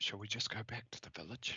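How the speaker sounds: quiet, hushed whisper. A player in a tabletop game speaks in character to the party, whispering quietly. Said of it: "I will whisper quietly".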